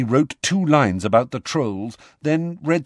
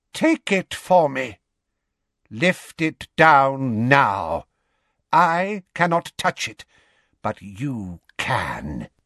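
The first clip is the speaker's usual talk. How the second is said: cold, pitiless voice, empty of kindness. Narrator reads a voice issuing from Harry's own mouth, high and cold. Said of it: "a high, cold voice, empty of any human kindness".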